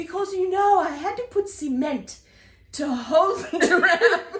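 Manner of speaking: put-on boastful, proud, loud South African accent. Retelling what a man said to them while outside: South African accent. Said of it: "in his South African accent".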